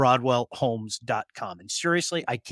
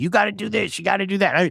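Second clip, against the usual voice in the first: bossy, raised, high-pitched yelling; 6 semitones higher, 4 dB louder than usual. Telling viewers how Blake yells, imitating Blake yelling. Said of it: "Like Blake's yelling at me".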